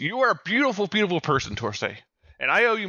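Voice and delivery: high, yelled voice. Reaching his mech, the player's character Jake yells over the comms to Torsay. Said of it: "just yells".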